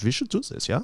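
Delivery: fake sexy German accent. Imitating band members deciding to make music: put-on German accent. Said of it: "Why do they all sound like sexy Germans?".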